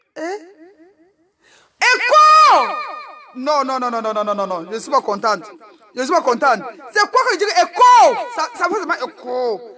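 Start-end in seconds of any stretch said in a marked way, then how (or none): 1.8-2.6 very high, loud shout. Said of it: "Mais volume, volume".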